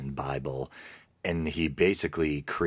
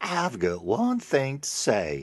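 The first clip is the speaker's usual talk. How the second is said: intense, fiery, swooping, put-on American Southern accent; 9 semitones higher than usual. Repeating that guy's line to mock him, in a mocking southern accent. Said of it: "I probably shouldn't be mocking that guy, Southern one".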